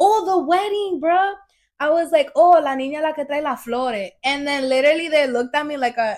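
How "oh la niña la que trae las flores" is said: put-on accent from the Dominican Republic. Retelling her own words at a wedding: retelling own words, Dominican accent. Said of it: "you sounded mad Dominican".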